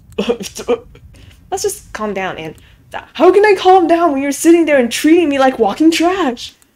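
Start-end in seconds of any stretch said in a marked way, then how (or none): 3.1-6.5 loud, fast, shrill rapid-fire shouting. Told to calm down, a character snaps back at the other, yelling. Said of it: "Why are you yelling all of a sudden?".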